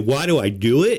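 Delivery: ordinary delivery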